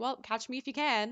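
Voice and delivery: normal talking voice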